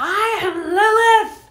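piercing, very high, full-volume shrill yell. Recounting a woman being taken outside, retelling a yell. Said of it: "she yelled".

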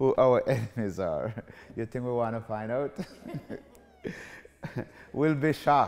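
words breaking up with laughs throughout. Reading a viewer's question aloud to the audience, laughing while reading. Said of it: "I'm laughing".

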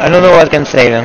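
plain

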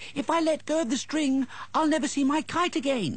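very high, alarmed cry like a little mouse. Willy the little mouse, as wind pulls his kite away, crying out in alarm. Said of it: "cried Willy".

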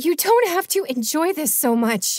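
put-on wheezing, breathless, out of breath, high pitch. Doubled over in the dark, the narrator speaks to the man he's fighting, wheezing. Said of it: "I wheezed".

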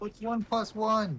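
mock shout, high-pitched, slow and drawn-out.

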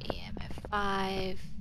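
hushed, whispered delivery.

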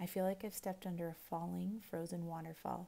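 ordinary delivery

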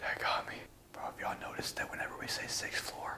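soft, hushed, breathless whisper.

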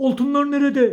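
high, loud, shouting pirate chief voice. Narrator reads a disappointed pirate chief asking after the gold, shouting. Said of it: "Hemen bağırdı".

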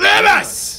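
high-pitched shouting.

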